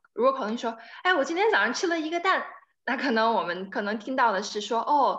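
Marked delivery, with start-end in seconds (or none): 1.1-2.5 cheerful, pleased, pitched-up voice. Showing how one sentence sounds in a different tone: happy. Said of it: "他很开心".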